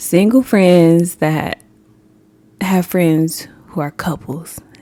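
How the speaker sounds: slow, deliberate, spelled-out delivery. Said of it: "today we're gonna be talking about single friends".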